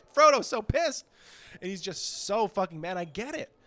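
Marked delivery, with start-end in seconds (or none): 0.2-1.1 high, loud, gleeful excited yell. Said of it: "he's shouting at these people like".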